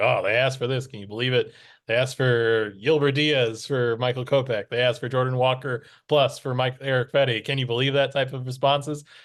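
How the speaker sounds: ordinary talk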